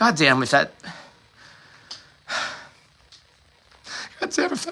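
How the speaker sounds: overcome, halting outburst, words breaking off. Recalling the man in front of the tank, emotional. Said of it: "sorry, I'm being emotional".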